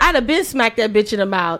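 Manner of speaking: plain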